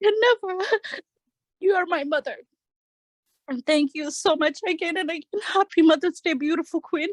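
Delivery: speaking through tears. Thanking a mentor who is like a mother on Mother's Day, crying. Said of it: "I'm sorry for crying".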